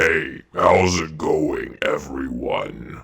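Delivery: huge, menacing, big, scary put-on monster voice. Voicing a toy figure greeting everyone, in a big scary voice. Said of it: "and you sound that way too".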